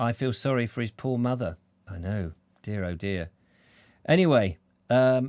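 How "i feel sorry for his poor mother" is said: plain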